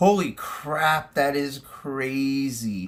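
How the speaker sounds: sarcastic-sounding tone. Reacting to the other speaker saying everyone must wear masks in class, sounding sarcastic. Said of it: "why do you sound sarcastic?".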